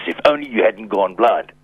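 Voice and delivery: put-on, angry, biting tone. Retelling a remark made to him last night, imitating an angry voice. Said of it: "she said to me in an angry voice".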